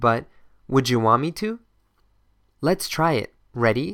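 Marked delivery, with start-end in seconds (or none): 0.7-1.6 words blended together, run-together pronunciation. Showing how native speakers say the question: words blended together. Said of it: "this is not clean pronunciation".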